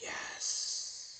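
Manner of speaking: barely audible, faint, wispy spirit voice. Voicing a spirit answering a question, in a faint wispy spirit voice. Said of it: "A wispy voice, barely reaching your ears".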